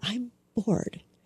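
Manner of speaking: very quiet. A parent retells answering their bored son at a performance: very quiet. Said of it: "very quietly".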